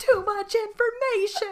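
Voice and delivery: very high, loud shouted exclamation. Describing how Chandler shouts at the TV, imitating Chandler shouting.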